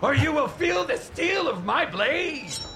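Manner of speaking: high, unhinged, menacing voice. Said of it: "This unhinged voice".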